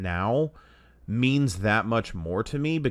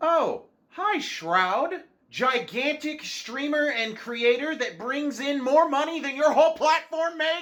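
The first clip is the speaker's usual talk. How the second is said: very high, shrill, full-on yelling. Character greets a big streamer in front of another character, yelling. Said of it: "Why are you yelling?".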